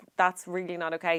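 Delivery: plain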